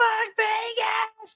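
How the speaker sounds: put-on very high drunken shriek, "Vegas" drawn out long. Retelling a drunk woman seated behind him, imitating her screaming. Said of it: "she is just screaming like".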